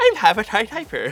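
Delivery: put-on Irish accent. Saying a guessed puzzle phrase during a word game: irish accent. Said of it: "so I was doing Irish accent".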